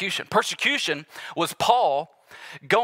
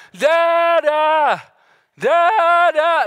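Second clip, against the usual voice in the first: put-on very high, loud, drawn-out child's scream; 10 semitones higher, 8 dB louder than usual. Describing his youngest son waking up and calling for him: imitating Ezra screaming. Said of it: "Just screaming at the top of his lungs".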